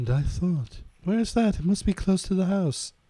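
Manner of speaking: low-pitched mock British man voice.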